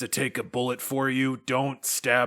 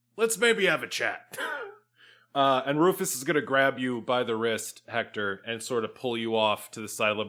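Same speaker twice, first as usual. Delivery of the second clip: ordinary talk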